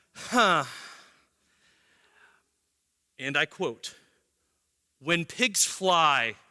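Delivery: mock coldly dismissive, icy cold delivery. Retelling how a woman turned down Josh: imitating a cold reply. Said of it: "she so coldly does this to Josh".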